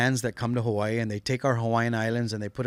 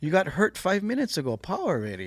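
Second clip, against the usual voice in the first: calm put-on grandma voice, higher; 7 semitones higher than usual. Imitating a calming grandmother: imitating a calm grandmother. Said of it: "she was also kinda calming too".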